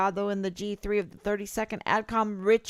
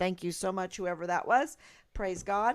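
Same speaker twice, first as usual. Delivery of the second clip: usual speaking voice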